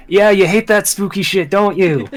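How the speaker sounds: loud, jeering shouted yell. Narrating the scene, the speaker voices Orin calling out while rolling down the stairs: Orin yelling. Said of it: "Orin just yells".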